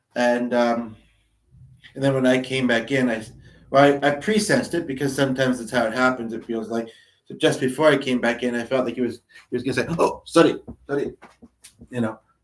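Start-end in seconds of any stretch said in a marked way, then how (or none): 10.0-11.2 put-on speaking with Middle Eastern accent. Retelling what another person was about to say: imitating his Middle Eastern accent. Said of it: "as I keep kind of trying to do his accent".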